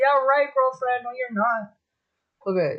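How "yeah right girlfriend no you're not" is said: usual speaking voice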